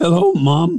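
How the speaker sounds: put-on very high, cracking boyish voice. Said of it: "when it stopped doing that".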